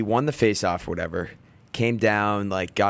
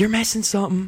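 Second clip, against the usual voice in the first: put-on very high, sudden, blurted-out scream; 12 semitones higher than usual. Retelling a shout from the bench at an opponent: imitating own past scream. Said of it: "and I, like, screamed it".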